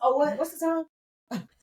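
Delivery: fast, high, hurried speech. Showing how they asked the time: imitating own fast question. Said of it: "'cause I say it so fast".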